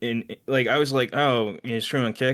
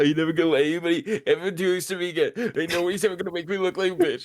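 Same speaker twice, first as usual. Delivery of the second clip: mock distraught, pitched-up, raging meltdown rant; 7 semitones higher than usual. Retelling a streamer's reaction, the speaker acts out his breakdown: mock breakdown rant. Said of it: "he's having this whole breakdown there".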